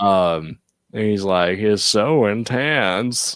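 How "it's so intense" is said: weird southern-sounding villain voice. Retelling what Joker says in a scene: weird Joker voice. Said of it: "Such a weird voice for Joker".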